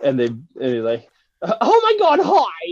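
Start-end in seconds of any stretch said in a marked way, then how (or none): 1.4-2.7 put-on very high, loud, very slow, squeaky, drawn-out girly voice. Retelling a drive-through comedy skit, doing a high-pitched girly voice. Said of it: "this really high-pitched girly voice".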